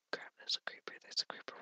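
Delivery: barely audible, very quiet, breathy whisper. Spotting a creeper while searching for diamonds, whispering. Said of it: "Why am I whispering?".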